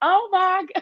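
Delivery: very high, weepy, tearful cry, put-on. Retelling how someone came over overwhelmed: imitating someone crying. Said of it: "T came over crying like".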